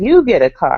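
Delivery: ordinary delivery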